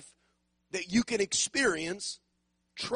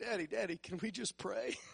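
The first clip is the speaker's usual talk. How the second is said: quieter, mock-sweet put-on voice; 8 dB quieter than usual. A father retelling his daughter asking to pray before discipline, imitating her sweet voice. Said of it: "in the sweet voice".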